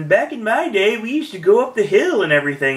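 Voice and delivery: high-pitched put-on old man voice. Retelling what a man said about the old days, in Wilbur Atkinson old man voice. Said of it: "he goes into the old man voice or my Wilbur Atkinson voice".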